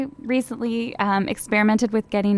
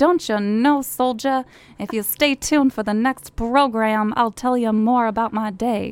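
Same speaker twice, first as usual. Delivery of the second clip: mid-century 1950s woman's radio-style voice. Speaker showing how women used to talk, in a 1950s woman voice. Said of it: "what's my 1950s woman voice?".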